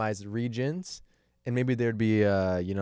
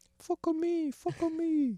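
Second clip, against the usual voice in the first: very high mock Chinese accent in a woman's voice. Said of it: "this woman that I'm pretending to be".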